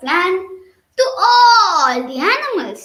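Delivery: ordinary delivery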